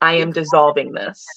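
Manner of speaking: put-on steady, unshaken, firm voice. Retelling a woman's reply to a demand for fifty percent: imitating a steady, unshaken voice. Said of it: "Without a shake in my voice".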